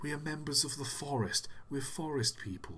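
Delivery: soft, refined, posh, well-spoken elf voice. Describing how everyone voices elves, demonstrating a posh, well-spoken elf voice. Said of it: "Everyone gives elves this sort of posh, sort of outstanding, well spoken".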